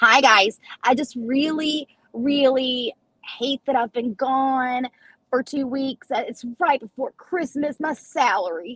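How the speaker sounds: derisive, mocking take on an apologetic tone. Acting out how you hear her in your head, mocking imitation of her. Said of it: "this is how I hear her in my head".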